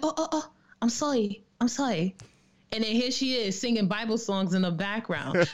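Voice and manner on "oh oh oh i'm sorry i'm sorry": startled, high, flustered, apologetic tone. Retelling their mom apologizing after hearing about the podcast: imitating their mom. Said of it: "She's like".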